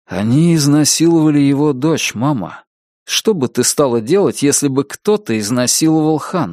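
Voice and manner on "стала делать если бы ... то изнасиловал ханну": ordinary delivery, nothing marked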